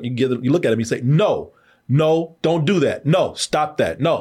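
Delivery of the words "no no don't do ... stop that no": firm, stern, very slow scolding tone. Showing how to scold a dog in the moment: stern voice. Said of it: "give them a stern voice".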